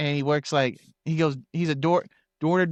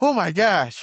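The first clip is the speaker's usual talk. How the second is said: acted flustered, caught-out, panicked alarm; 3 semitones higher, 3 dB louder than usual. Retelling how a friend reacted to a surprise text: imitating someone panicking. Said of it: "he starts panicking".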